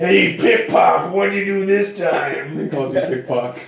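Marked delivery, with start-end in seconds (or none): 0.0-2.6 put-on drunk, belligerent, loud, high taunting voice. Narrating a scene, the speaker voices a man greeting the listener: drunk John Ton voice. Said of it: "He's drunk, obviously".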